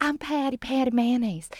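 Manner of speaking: put-on Southern accent. Retelling a scene, voicing Patty Mayonnaise in her little Southern accent. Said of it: "she goes in her little Southern accent".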